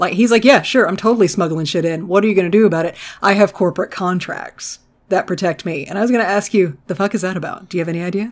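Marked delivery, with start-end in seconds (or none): 0.4-5.8 put-on confident tone. Retelling what a cartoon smuggler said: imitating a confident character. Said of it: "fairly confident".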